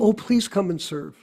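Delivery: ordinary talk, nothing marked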